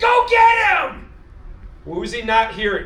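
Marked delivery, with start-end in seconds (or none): 0.0-1.1 high, loud shouting, slow and drawn out. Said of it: "and he's yelling at him".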